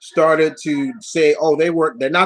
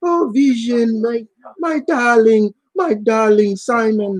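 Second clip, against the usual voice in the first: put-on cheap European accent, high, slow, drawn out; 7 semitones higher than usual. Imitating a cartoon character's lines: imitating a cheap European accent. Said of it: "she had this just really cheap European, sounded like Zsa Zsa Gabor".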